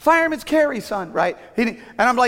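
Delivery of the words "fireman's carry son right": put-on yelling, much higher, louder. Retelling coaching him from the side of the mat: retelling a yell. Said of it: "I'm yelling".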